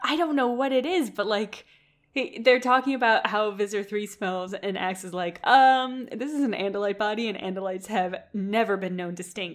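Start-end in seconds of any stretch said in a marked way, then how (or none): none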